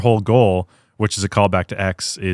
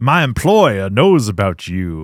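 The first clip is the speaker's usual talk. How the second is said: weird greasy put-on Southern detective voice. Retelling a film scene, doing the detective's line, weird greasy Southern detective voice. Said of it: "weird, greasy Southern detective".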